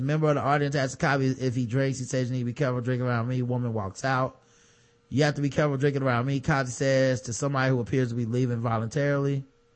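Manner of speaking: ordinary talk, nothing marked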